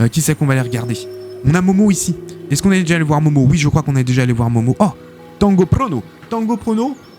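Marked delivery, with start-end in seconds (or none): 5.4-6.9 light, comic put-on Italian accent, high and slow. Speaker browsing top players' decks says the next player's name in a mock Italian accent. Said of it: "Je prends toujours un accent un petit peu italien".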